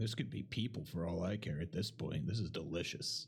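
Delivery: quiet mumbling under the breath. Speaking in character about the food: muttering under breath. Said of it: "I just kinda mutter under my breath".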